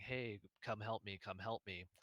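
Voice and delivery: ordinary talk, nothing marked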